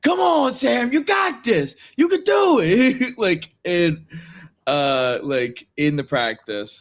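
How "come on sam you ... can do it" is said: put-on high-pitched, loud, rousing encouraging yell. Retelling how Mikey yelled during moonsault practice: imitating Mikey yelling encouragement. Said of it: "yelled at me".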